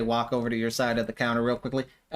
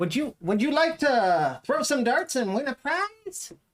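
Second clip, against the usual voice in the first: very high, tiny, sing-song little voice; 13 semitones higher than usual. Narrating to players approaching a stand, voicing the tiny halfling stall keeper. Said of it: "tiny halfling".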